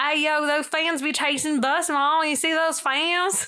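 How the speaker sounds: put-on high, poor country accent. Retelling a viral van video, imitating Justin's original country accent. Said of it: "Justin has his original accent".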